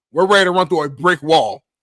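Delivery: ordinary talk, nothing marked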